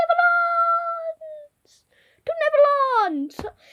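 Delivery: very high, shrill, loud, full-voice scream. Narrating a character launched flying through the sky, screaming. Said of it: "screaming Neverlands!".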